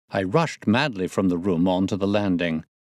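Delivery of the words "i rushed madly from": usual speaking voice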